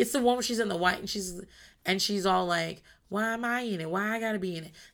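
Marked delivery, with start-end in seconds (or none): 3.1-4.7 very soft, hushed, quiet voice. Retelling a reunion moment, imitating NeNe talking real soft. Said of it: "she's talking real soft".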